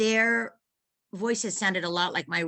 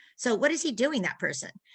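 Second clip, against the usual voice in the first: usual speaking voice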